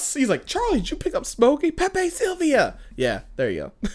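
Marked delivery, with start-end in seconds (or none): 0.5-2.8 frantic, very high-pitched, freaked-out blurt. Retelling a sitcom scene, imitating Charlie freaking out. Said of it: "He's just, like, freaking out".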